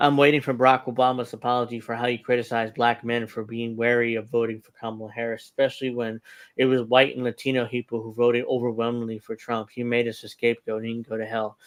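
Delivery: ordinary delivery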